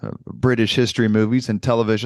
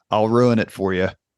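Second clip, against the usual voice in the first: normal talking voice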